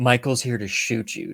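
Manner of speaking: normal talking voice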